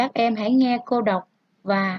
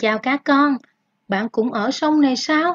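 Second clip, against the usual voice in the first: surprised reading aloud, questioning tone; 3 semitones higher, 3 dB louder than usual. Vietnamese story read aloud for pupils, surprised tone. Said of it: "Ta cần đọc với giọng ngạc nhiên".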